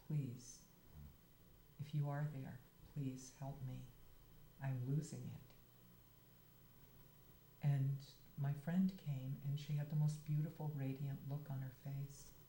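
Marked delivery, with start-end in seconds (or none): none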